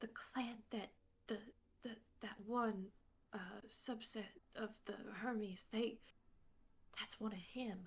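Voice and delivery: hushed, soft, secretive whisper. A character leans down to another's ear, whispering. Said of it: "she leans down and whispers in her ear".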